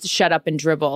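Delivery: normal talking voice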